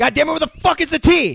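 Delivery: put-on very high, loud screeching outburst. Retelling a movie character's angry line: imitating someone yelling. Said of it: "So then he once again yells".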